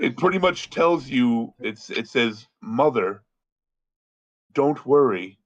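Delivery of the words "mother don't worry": very soft, soft-spoken, gentle-toned voice. Reading out a quoted line to friends, very soft voice. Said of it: "this very soft voice".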